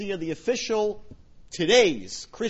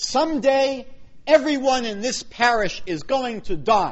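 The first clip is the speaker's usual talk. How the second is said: loud, high, stern, booming delivery. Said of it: "announced to everyone very sternly".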